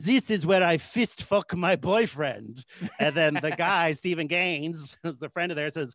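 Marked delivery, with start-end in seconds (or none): 0.0-2.6 put-on heavy French accent laid on thick, slow. Retelling what Jacques said while showing a friend the bedroom, thick French accent. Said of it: "says in a thick French accent".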